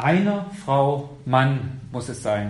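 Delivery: EINER stressed, drawn out slowly.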